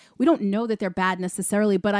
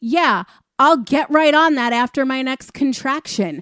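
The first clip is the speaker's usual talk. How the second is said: fed-up, exasperated sarcasm with raised voice; 4 semitones higher, 7 dB louder than usual. Suggesting how a character should deliver a line: exasperated, sarcastic. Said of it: "give her the exasperated, sarcastic".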